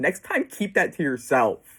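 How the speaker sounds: acted sobbing through the words, tearful and crying. Retelling a dream where a child starts crying: imitating a crying child. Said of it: "And he keeps crying".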